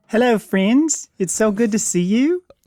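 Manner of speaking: rough attempted New Zealand accent. Introducing the show's eccentric host Matt, then speaking as him: imitating Matt, Kiwi accent. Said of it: "I can't do a Kiwi accent very well".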